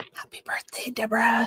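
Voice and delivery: hushed, soft whisper. Aside while showing an animal, greeting someone by name, whispering. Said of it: "I'm whispering".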